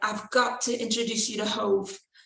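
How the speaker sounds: put-on British accent. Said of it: "Excuse my British accent".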